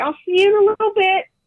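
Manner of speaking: high, loud yelling.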